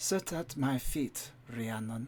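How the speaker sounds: quiet, slow, soft and courteous tone. Voicing a character in a role-play scene: quiet and polite. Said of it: "say to you quietly and politely".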